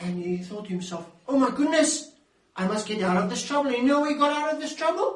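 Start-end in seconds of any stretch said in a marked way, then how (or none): 1.3-3.7 jolted, startled, shocked exclamation. Acting out a healed man caught by Pharisees: acting shocked. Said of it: "was so shocked".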